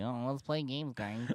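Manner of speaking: put-on a little nasal, like a child. Speaker shows the other speaker how his own voice sounds; nasal childlike voice. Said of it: "I sound like a child, a little nasally".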